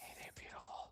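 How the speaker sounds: whispering. Speaking in character into another character's ear: whispering. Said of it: "and then I whisper into his ear".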